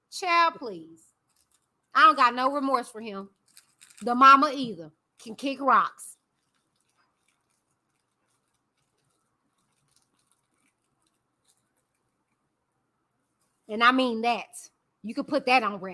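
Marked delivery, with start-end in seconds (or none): 1.9-15.9 speaking while chewing, mouth full. Speaker gives an opinion to y'all while eating fruit snacks: talking while munching. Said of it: "I am munching".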